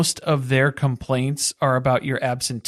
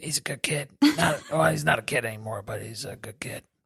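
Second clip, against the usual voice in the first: put-on smoker's voice, much lower and quieter; 3 semitones lower, 7 dB quieter than usual. Act out how she talked about Tony being a good kid, [name] sounding like Smoker Mom. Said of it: "starting to sound like Smoker Mom".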